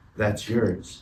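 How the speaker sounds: low, hushed, close whisper. Retelling a biology class, the speaker quotes Dad whispering in their ear. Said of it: "he whispers in my ear and he goes".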